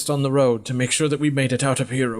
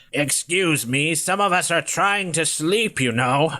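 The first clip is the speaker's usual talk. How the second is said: put-on irritated, disgusted old woman voice, complaining tone; 3 semitones higher than usual. Voicing an old woman on a cart, looking over with disgust. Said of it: "looks over at you with kind of a disgust".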